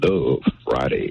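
deep, low baritone voice. Asked by the host to give a Love Friday on the spot, deep baritone voice. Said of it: "in that deep baritone voice of yours".

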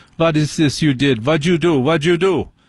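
put-on German accent. Retelling what a foot surgeon said about an injury, in a fake german accent. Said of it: "pretend to be German".

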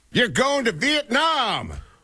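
very high, thrilled, swooping excited voice. Announce the trip prize on Wheel of Fortune as a very excited Ryan Seacrest impression. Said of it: "Ryan Seacrest says very excitedly".

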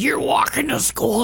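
raspy, rough, creaky demon-like voice. Retelling what their mom said after pinning them to the wall, in a demon voice. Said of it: "She said it in like a demon voice".

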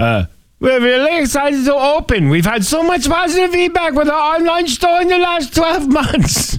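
put-on high-pitched Swedish accent. Reading out a quote from Jansen, in a Swedish accent as Jansen. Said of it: "That's your Swedish accent?".

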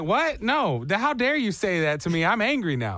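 ordinary delivery

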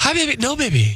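very high-pitched, special voice. Imitating a buddy talking to his girlfriend while playing golf, in a girlfriend voice. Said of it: "a girlfriend voice where they go higher".

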